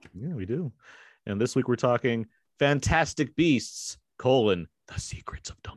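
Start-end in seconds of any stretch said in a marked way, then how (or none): 4.9-5.8 joking, hushed, secretive whisper. Announcing this week's film title, playfully whispering it as a joke. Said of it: "Why did you whisper it?".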